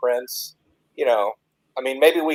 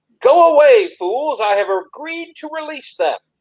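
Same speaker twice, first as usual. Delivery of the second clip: very high-pitched character voice; 13 semitones higher, 3 dB louder than usual. Casting ventriloquism to fake a prince's orders: Prince Assheart's voice. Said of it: "it's obviously gonna be Prince Assheart's".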